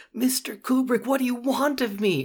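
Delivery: play-acted crying, tearful, very high-pitched pleading. Retelling how an actor broke down during a take: imitating Scatman Crothers crying. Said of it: "broke down into tears and said".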